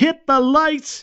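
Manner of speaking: yelled high and slow.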